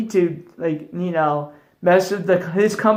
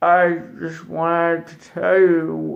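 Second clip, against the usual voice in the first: put-on drunk slurring, much slower; 2 semitones lower than usual. Describing how people who drink too much talk, imitating drunk slurring. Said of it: "they slur their words".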